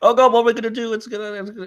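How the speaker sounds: high, loud, over-emotional panicking.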